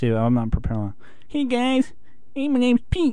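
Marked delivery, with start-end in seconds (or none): 1.3-3.1 put-on voice, pitched very high. Asked to do an impression of Pete, a Pete impression. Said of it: "do your impression of Pete".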